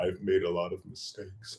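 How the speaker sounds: soft, slow, sheepish mumble. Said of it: "her only response was to sheepishly go".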